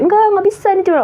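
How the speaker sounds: high, insistent, stubborn tone.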